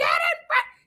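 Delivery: put-on very high, shrill, furious, enraged yell. Retelling an enraged mom yelling at her daughter: imitating an enraged yell. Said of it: "she was enraged".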